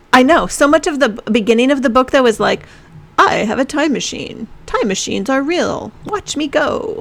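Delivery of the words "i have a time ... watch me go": narrator voice, drawn out. Summing up the book's opening, impression of its narrator. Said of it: "That is a really good impression".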